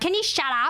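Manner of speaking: mock curt, rude, high, snappish tone. Retelling a caller snapping at her husband: imitating a rude snap. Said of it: "that's the way she talks".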